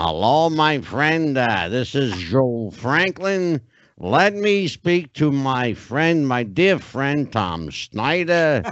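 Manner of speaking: very slow, drawn-out speech, every word stretched. Recalling calling people up on the phone: Joe Franklin impression. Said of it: "I used to do an impression of Joe Franklin".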